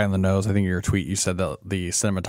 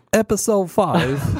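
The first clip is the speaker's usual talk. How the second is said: high, put-on British accent; 12 semitones higher, 4 dB louder than usual. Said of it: "Read it in her accent".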